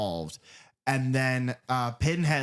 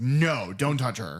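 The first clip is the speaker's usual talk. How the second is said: commanding put-on villain voice. Retelling a film scene, imitating Pinhead: commanding Pinhead voice. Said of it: "commanding in his voice".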